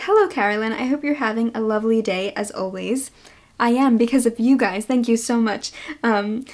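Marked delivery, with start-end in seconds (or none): none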